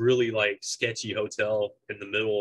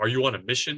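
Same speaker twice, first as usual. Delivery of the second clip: put-on mimicked Indian accent; 2 semitones higher than usual. Retelling what a guy said when he asked for a room, put-on indian accent. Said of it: "he says it in like this Indian accent".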